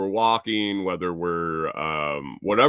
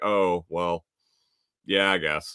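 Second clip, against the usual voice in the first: put-on hesitant voice, slow and halting; 2 semitones lower than usual. Speaker retells a woman's answer to him, imitating a slow hesitant reply. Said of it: "she got kind of slow for a second".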